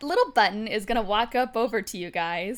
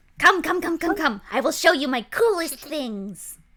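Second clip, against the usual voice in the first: higher, eager, beckoning cat-folk shopkeeper voice; 5 semitones higher, 3 dB louder than usual. Voicing a little tabaxi shopkeeper greeting the players: tabaxi shopkeeper voice. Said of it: "She, she doesn't elaborate".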